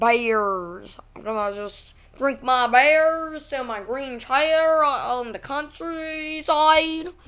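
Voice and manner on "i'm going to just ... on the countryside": slow, drawling, put-on rural country accent. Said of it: "It's my country accent".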